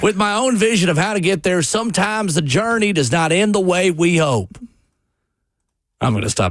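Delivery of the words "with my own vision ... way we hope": put-on Southern accent, higher. Reading out a coach's statement in a fake southern accent. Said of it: "the fake Southern accent".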